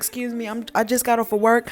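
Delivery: mock pleading, acted out. Retelling her answer to a couple who stopped their car, retelling a plea. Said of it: "I'm pleading".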